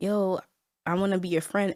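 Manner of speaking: normal talking voice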